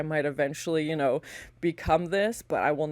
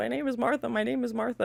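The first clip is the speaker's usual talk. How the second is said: sweet, high-pitched voice; 7 semitones higher than usual. Describing actors playing ghouls, the speaker imitates one in Martha's sweet human voice. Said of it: "and like a very human and like sweet voice".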